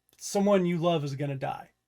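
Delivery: ordinary delivery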